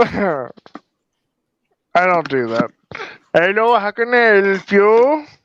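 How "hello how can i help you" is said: high, slow Indian-accented English. Asked to show an accent he sometimes throws in, speaking in an indian accent. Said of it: "I would like to hear your Indian accent".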